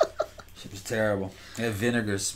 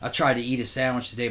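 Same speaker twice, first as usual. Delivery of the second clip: ordinary delivery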